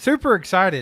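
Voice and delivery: mock super pumped, loud and high-pitched excitement.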